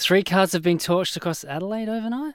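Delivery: upspeak, rising pitch on the word overnight. Reading a line off a random piece of paper: upspeak, rising at the end. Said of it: "Upspeak dramatically softens the statement by making it sound like a question".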